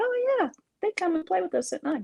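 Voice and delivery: put-on very high, tiny little child voice. Retelling how he matter-of-factly described the night playmates, in his little wee voice. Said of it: "said in his little wee voice".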